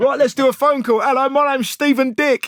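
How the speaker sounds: over-the-top radio DJ voice, very loud, booming, high-pitched. Parodying morning radio breakfast show hosts, doing a bombastic radio DJ voice. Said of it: "same bombastic energy".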